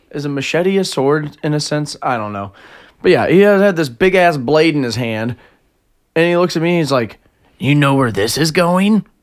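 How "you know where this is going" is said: weird, creepy, edgy try-hard anime villain menace. Retelling a guy with a big blade looking at them, creepy edgy neckbeard voice. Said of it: "Like some sort of fucking creepy neckbeard dude".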